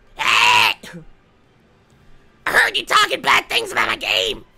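ragged, loud, rough, swooping scream. Voicing Captain Toad after apologizing to him: Captain Toad screaming. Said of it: "he's screaming at me".

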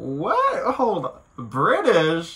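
stunned disbelief.

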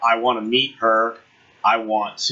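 ordinary talk

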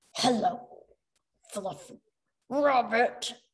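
muffled robotic voice. Reading a story, a spider bot pinned under a character's foot speaks: muffled robotic voice. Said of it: "came a muffled robotic voice".

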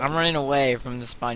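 normal talking voice

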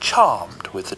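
ordinary delivery

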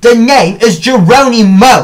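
slow, emphatic, loud, drawn-out shout. A brother answering his sister who called him by a nickname: shouting. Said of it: "I shouted".

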